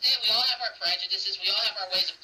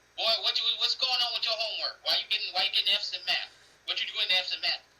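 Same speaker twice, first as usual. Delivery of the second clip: gruff, fatherly scolding tone. Acting out an imagined scene: a father asking his son about failing math, imitating a gruff dad. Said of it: "his dad come in there all gruff".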